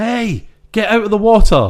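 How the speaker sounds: shrill, high, loud shout. Retelling a movie scene where a surfer warns a swimmer: imitating a character shouting. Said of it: "And he shouts".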